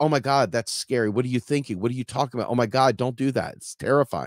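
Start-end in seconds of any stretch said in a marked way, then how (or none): none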